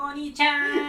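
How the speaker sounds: acted young girl voice. Answering a request from the others: hentai girl impression. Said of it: "do your best hentai girl impression".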